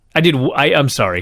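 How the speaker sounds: usual speaking voice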